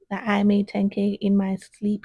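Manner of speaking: ordinary talk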